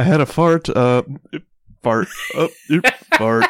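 broken-up, slow, choppy, cutting-out bad-connection audio. Telling the other speaker their audio keeps cutting out: imitating choppy cutting-out audio. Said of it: "all I hear is you just, like".

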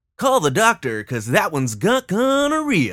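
put-on high, swooping old-time baseball announcer voice. Discussing a character's catchphrases with a co-host, quoting him in his baseball-talk voice. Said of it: "in his baseball talk".

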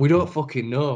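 ordinary talk, nothing marked

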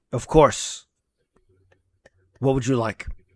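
very strong, forceful delivery. Playing the server answering a breakfast request; very forceful. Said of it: "very forceful".

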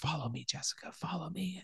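hushed, barely voiced, very quiet whisper. Retelling a film scene where whispers call jessica: imitating a whisper. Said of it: "we hear whispers".

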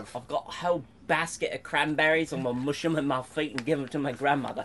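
attempted British accent. Friends taking turns at their best British accents, mock British accent. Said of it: "You guys want to do your best British accent?".

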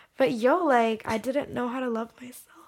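tearful, choking up, words breaking into crying. Speaker on a podcast, starting to cry mid-sentence, choking up and crying. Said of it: "Oh no, I'm crying".

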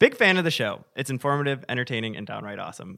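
ordinary talk

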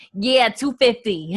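terrible, bad put-on Boston accent. Retelling a story, quoting a cab driver in the worst Boston accent ever. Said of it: "this is going to be the worst Boston accent ever".

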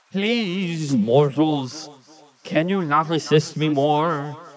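watery, gurgling, pleading spirit voice. Narrating a tabletop game, the speaker voices the river spirit addressing mortals: gurgling river-spirit voice. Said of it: "I am the spirit of the river, ... Says the gurgling voice".

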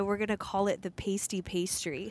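ordinary talk, nothing marked

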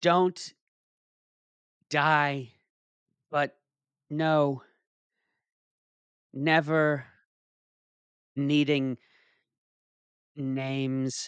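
put-on grief, very slow, breaking mid-phrase. Reading a joke eulogy aloud to another speaker: pretend emotional. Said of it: "this is just so emotional".

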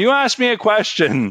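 put-on very high-pitched yell. Retelling answering a teacher back: retelling own yell. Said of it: "And I yelled back".

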